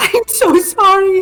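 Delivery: sobbing, crying speech. Playing a character holding a hurt kobold: crying while apologizing. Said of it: "Celia is sobbing".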